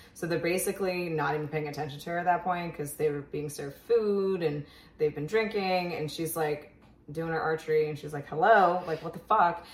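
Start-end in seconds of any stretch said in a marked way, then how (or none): 8.3-9.7 loud, annoyed, getting-mad, fed-up outburst. Retelling the character ignored by the game makers: imitating Katniss getting mad. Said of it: "she's just getting mad".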